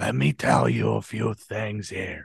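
low, quiet, hushed, pulled-back murmur. Comparing Pacino impressions, the speaker does the quiet one: quiet Pacino impression. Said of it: "when he gets real quiet".

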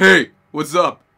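very loud put-on American accent. Showing how they'll greet someone at the door, deep American-sounding voice. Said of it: "Why are you American?".

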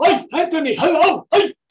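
put-on cliché high grandpa voice.

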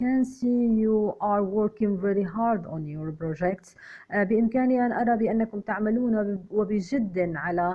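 plain reading voice

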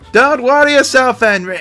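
attempted Scottish accent. Reviewing a show, the speaker repeats a clip's line in a bad scottish accent. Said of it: "I don't think I could do a Scottish accent any better".

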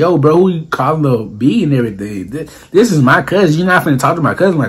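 ordinary talk

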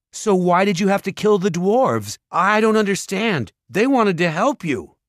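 loud very high voice. He raises his voice to address the ogre and keep him talking; raised voice. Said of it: "raised his voice".

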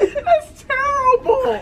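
high, slow, drawn-out groan of disgust through laughter.

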